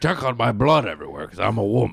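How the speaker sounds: put-on, fake man voice. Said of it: "I make a man voice".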